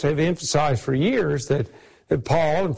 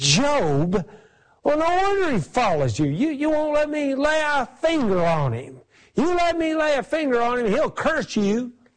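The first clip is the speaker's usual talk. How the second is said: very high-pitched, put-on spitting angry voice; 9 semitones higher than usual. Retelling Satan's reply to God about Job: Satan spitting with anger. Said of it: "you can almost hear him spit".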